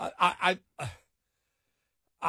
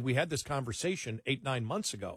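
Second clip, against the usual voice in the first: plain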